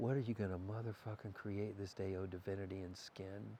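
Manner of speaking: low, soft whisper, close to the ear. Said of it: "Because I'm gonna whisper".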